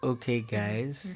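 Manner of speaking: low, soft, slow podcast-style radio voice. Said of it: "Let me just copy what you guys are doing".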